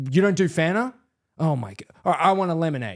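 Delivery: put-on bratty, rude, demanding, entitled kid voice. Retelling what a kid on a flight said: imitating a rude, demanding kid. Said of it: "Just so rude and, like, demanding".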